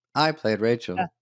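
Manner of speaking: glitchy, malfunctioning, buggy AI copy voice. Showing how good AI copies are now: glitchy AI Jennifer Aniston voice. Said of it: "It's got a few glitches".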